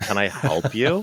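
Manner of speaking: acted-out sassy, attitude-heavy, slow, drawn-out tone. Retelling opening the door to a stranger, imitating own sassy attitude.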